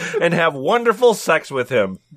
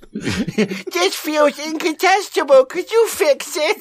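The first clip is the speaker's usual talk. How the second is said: put-on squeaky, very high baby talk; 10 semitones higher than usual. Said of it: "Did he say it in a baby voice?".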